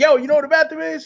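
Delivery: mock, very high, blunt, rude shouted holler. Retelling asking someone at a booth where the bathroom is: imitating own shout. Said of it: "And I shouted at him".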